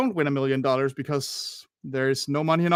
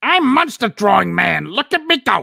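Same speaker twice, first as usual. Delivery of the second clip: loud, high, widely swooping character voice; 7 semitones higher, 9 dB louder than usual. Drawing claws on a monster, doing a Suction Cup Man impression. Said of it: "That's my best Suction Cup Man impression".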